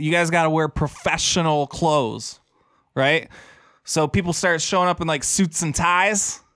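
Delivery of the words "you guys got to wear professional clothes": normal talking voice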